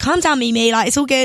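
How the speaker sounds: ordinary delivery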